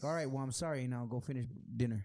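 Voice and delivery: put-on dry, curt, dismissive tone. Acting out an apology in an argument: acting a dry, dismissive apology. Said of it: "very, very dry".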